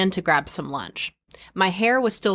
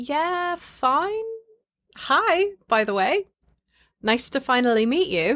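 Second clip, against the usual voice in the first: put-on English accent, unhurried, high pitch; 8 semitones higher than usual. Retelling own reply on finally meeting someone, in a put-on English accent. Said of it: "Do you like my English accent?".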